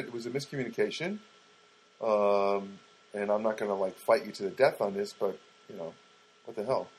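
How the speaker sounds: normal talking voice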